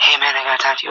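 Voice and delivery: speaking real low. Showing how he talks to a live DJ to get him outside, speaking real low. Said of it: "Like, I'm real low".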